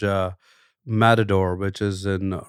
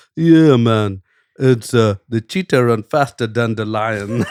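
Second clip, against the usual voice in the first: put-on Jamaican accent, loud; 6 dB louder than usual. Telling a joke, voicing the Jamaican guy's answer in a Jamaican accent. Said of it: "starts speaking the Jamaican accent".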